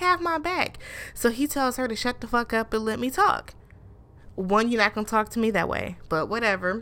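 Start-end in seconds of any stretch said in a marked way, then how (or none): 0.0-0.8 high-pitched shrieking scream. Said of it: "she keeps going".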